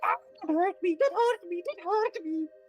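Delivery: very high, shrill shriek of a tiny creature. Game master voicing a tiny Gelugon screaming in the players' heads, screaming tiny Gelugon voice. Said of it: "you hear a voice just screaming in your head".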